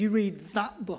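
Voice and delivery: imitated snarling voice. Retelling a stranger at a train station screaming out: imitating a snarl. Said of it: "He screamed, snarled at me".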